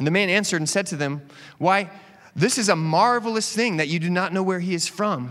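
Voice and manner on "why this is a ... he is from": sarcastic, mock-amazed tone. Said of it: "Can you guys sense the sarcasm there?".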